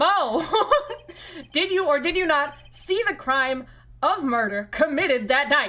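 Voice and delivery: loud, high shouting. Questioning the witness mo in a game, yelling at a witness. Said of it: "I'm yelling at him".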